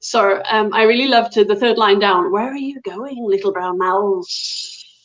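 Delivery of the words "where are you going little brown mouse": sibilant, hissing snake voice. Demonstrating doing voices when reading a story to kids, in a snake voice. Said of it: "and you have this sound".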